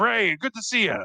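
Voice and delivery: very high-pitched, gruff soldier-type military voice. Voicing a gruff military character greeting Ray with arms spread: gruff military character voice. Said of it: "he is kind of a gruff military style person".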